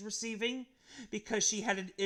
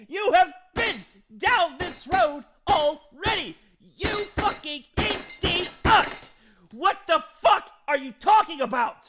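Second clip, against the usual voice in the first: very loud, furious, shrill, enraged screaming; 9 semitones higher, 12 dB louder than usual. Speaker berating someone, screaming angrily. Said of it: "I'm sorry for screaming so much".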